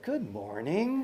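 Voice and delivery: put-on saccharine, sweetest sugary-sweet voice. Retelling greeting an angry woman in the morning, put-on sweetest voice. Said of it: "in my sweetest manifester voice".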